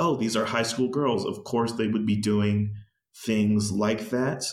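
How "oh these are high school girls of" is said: plain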